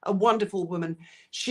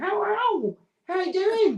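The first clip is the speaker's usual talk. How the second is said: put-on very high, slow American accent pet voice; 10 semitones higher than usual. Voicing their pet's greeting, in an American accent pet voice. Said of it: "So she's got an American".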